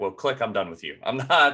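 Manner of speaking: usual speaking voice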